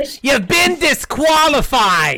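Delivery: put-on elderly woman's voice.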